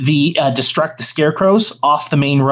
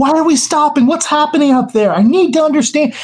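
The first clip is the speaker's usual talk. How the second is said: mock shrill, very high-pitched yelling shout; 12 semitones higher than usual. Retelling how a man standing at the back called forward, retelling a yell. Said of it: "he's yelling back and forth".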